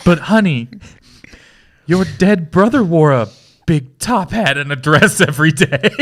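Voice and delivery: words broken up by laughter. Reading a script line aloud and cracking up at it, laughing while reading. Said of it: "now I'm laughing at it".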